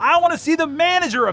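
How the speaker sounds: acted furious high yell. Speaker recounts a woman at the reception desk: retelling an angry yell. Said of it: "Then she yelled".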